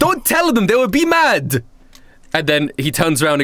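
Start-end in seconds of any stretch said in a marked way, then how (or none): 0.0-1.6 put-on shouting voice, higher pitch. Voicing Leonardo da Vinci yelling from inside the palace: Leonardo da Vinci yelling. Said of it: "you hear Leonardo da, da Vinci's voice yelling".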